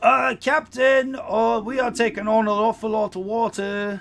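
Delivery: very high, very loud, rough shout. [name] yells out to the Captain as they take on water, rough yelling voice. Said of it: "the sound of [name]'s rough voice as he yells out".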